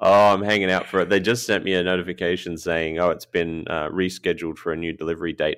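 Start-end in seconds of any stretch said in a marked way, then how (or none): none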